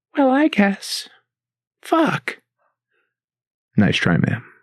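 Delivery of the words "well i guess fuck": put-on very high-pitched, slow, sweet little old lady voice. Playing a woman at a bank drive-thru asked to say the F word: sweet old woman voice. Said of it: "this sweet old woman's going to be sitting in the drive-thru like".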